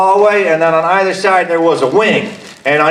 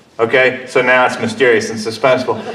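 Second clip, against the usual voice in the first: plain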